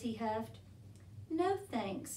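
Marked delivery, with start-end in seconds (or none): 1.3-2.2 little high murmur. Narrator reading Koala's reply to Wombat, murmured. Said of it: "murmured Koala".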